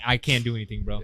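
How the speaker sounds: firm, stern tone. Retelling what the manager told a customer: imitating a very stern manager. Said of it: "very stern".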